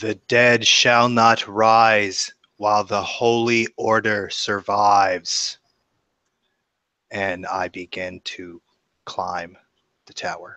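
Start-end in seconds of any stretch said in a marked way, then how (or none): 0.0-5.6 loud authoritative call with drawn-out rising tone. A player character below a bell tower calls out in loudest, most authoritative voice. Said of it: "I call out in my loudest, most authoritative voice".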